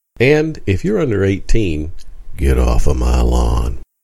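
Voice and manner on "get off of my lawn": low, slow movie tough-guy voice impression. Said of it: "that's my best Clint Eastwood impression".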